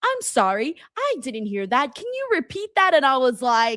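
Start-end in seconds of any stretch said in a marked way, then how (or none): 0.0-2.9 super loud, high phone-assistant voice. Retelling what a voice assistant said in the studio: imitating a loud Siri voice. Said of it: "super loud".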